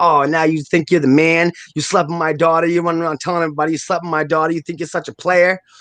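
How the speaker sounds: all-out, high-pitched screaming. Retelling how a girl's mother confronted him outside his house, imitating her screaming. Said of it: "she just started screaming like".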